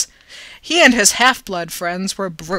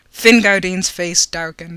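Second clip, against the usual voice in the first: ordinary delivery, nothing marked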